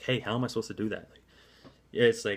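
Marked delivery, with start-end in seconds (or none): 0.0-1.1 deferential, respectful, yielding tone. Showing how to answer a counter offer: deferential tone. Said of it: "with it in a deferential tone".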